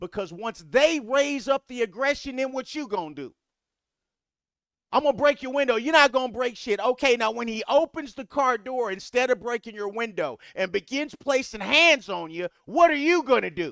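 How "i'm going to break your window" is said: mock tough talk, higher. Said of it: "you need to not talk tough".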